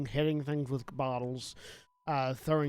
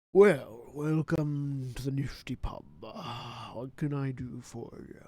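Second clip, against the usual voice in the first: very slow, drawn-out, large orc voice; 2 semitones lower than usual. Voicing a large orc at the bar greeting a player: large orc barkeep voice. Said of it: "This large orc looks down at you".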